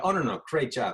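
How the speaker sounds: usual speaking voice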